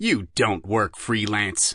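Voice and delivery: speaking nastily. Reading a novel aloud, a cop questioning a suspect: nasty tone. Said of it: "Despin told her nastily".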